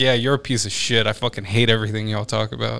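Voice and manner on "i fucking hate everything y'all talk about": ordinary talk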